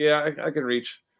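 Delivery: slow, flat, dry, expressionless deadpan. Retelling a line from a movie character: imitating a deadpan line. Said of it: "he said it so deadpan".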